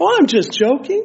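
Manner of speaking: high, mock-innocent tone with wide pitch swings, tossed off.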